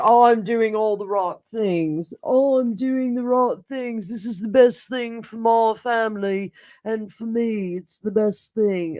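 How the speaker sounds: dumb, self-important, important-sounding courtroom-style voice. Telling from the cards how Harry will be feeling, speak for him in a dumb Harry voice. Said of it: "That's my dumb Harry voice".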